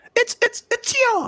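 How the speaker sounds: impression, very high and far-off sounding.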